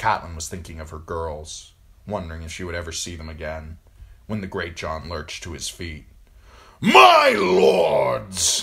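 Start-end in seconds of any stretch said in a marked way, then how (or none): 6.8-8.6 high, loud, booming shout. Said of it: "he shouted, his voice booming".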